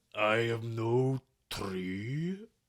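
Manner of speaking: loud, very slow, high, drawn-out tree voice. Doing the Treebeard bit the film was expected to drop: Treebeard voice. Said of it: "trying to do a John Rhys Davies tree beard".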